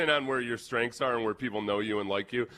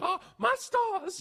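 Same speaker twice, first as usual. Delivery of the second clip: put-on Southern belle voice, higher pitch. Retelling how Rich Eisen reacted to a trade suggestion: Southern Belle voice. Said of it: "Southern Belle voice, paraphrasing what Eisen said".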